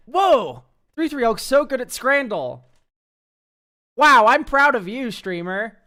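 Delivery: very loud, high, gushing cheering praise. Asking chat for kinder feedback, acting out pretend chat praise. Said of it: "let's try this, chat".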